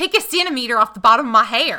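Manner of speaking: very loud, put-on North Carolina accent. Repeating the line for the other speaker, in a north carolina accent. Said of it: "That was very North Carolina".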